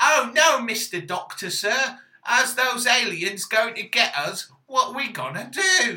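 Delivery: loud, high working-class lad character voice. Imitating a woman addressing the Doctor about the aliens, as a woman passing as a working-class lad. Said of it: "trying to pass herself off as a working class lad".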